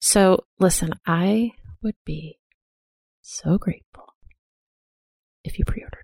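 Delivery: quiet whisper. An author asking listeners to pre-order their book, whispering. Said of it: "I'm so serious about it that I'm whispering".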